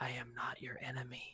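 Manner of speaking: very quiet, soft purring voice. A game narrator voices a voice heard in a player's mind, purring. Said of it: "you hear a purring voice in your mind say".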